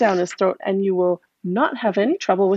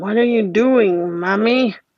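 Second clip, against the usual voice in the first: put-on very old, elderly man's voice. Narrator reads a strange baby speaking to its mother: very old man voice. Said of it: "says in the voice of a very old man".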